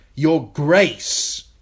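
sharp, cutting, very loud tone. He answers a girl as they slip out of the throne room, sharply. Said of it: "he said sharply".

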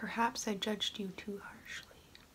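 soft, hushed, whispered murmur. Reconsidering a food just eaten and speaking to it softly.

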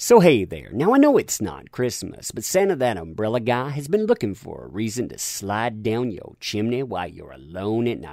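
plain

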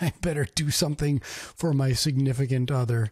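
mock panicked, fretting voice.

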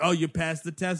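ordinary delivery

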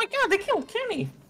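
very high, squeaky chipmunk voice. Player with a squeaky voice quotes the show; South Park squeaky voice. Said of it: "It's like you're fucking chipmunk".

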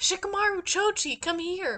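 shouting, pitched high. Retelling a story where Ino calls her teammates over: imitating someone shouting. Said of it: "she shouts out".

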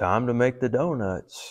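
put-on sad, somber voice. Retelling what a donut baker said each morning leaving for work, mock-sad and somber. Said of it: "he would say in a sad, somber tone".

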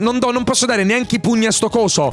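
ordinary delivery

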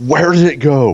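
high, frightened, startled yelp. Recounting how he reacts to a silhouetted figure, retelling a scream. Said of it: "He just screams".

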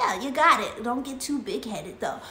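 ordinary delivery

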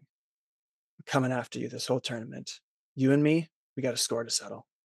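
whispering angrily. Voicing a rival who threatens Left Wing in a tense room: whispering angrily. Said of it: "he's trying to whisper something to you".

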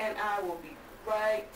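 ordinary delivery

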